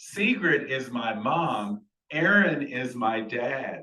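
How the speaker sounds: put-on, very loud and clear, every word distinct. Retelling an embarrassing mix-up, the speaker quotes the correction in a very loud, clear voice. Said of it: "with a very loud, clear voice says".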